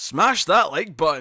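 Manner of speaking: slow, loud, drawn-out yell. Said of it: "just yelled out".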